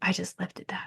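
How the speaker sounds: barely voiced, very hushed whisper. Retelling what a lifter said after a strong squat set: imitating a whisper. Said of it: "whispers to me".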